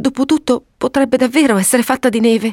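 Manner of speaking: scared, alarmed, frightened, high pitch. A narrator reads a woman speaking to her husband, frightened. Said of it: "esclamò spaurita".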